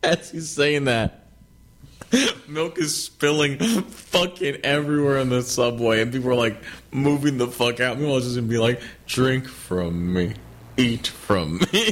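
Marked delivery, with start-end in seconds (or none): 9.1-11.9 very slow, drawn-out, lumbering movie-monster voice. Retelling a guy walking up to people on the subway, Frankenstein monster voice. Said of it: "He's just sounding like a Frankenstein monster".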